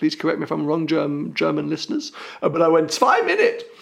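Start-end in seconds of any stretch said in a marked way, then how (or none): 2.9-3.5 panicky, high outburst. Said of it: "'cause I panic".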